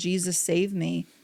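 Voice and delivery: acted blubbering crying. Retelling lying on the kitchen floor, the speaker acts out wailing for help. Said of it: "I'm wailing and just blubbering, crying".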